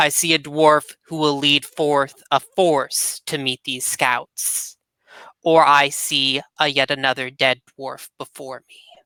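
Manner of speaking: ghostly dead dwarf king voice. In an actual-play game, the dwarf king's ghost addresses Revik; ghost dwarf king voice. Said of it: "The fiery ghost of a dwarf king reclaims his throne and unleashes catastrophic forces for a noble exile and a kobold captain to survive".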